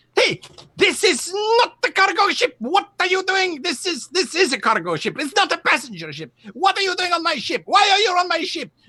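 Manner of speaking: very high, angry, furious yelling. Narrating a scene, the speaker voices a man descending steps toward you, angry shouting. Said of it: "shouting at you".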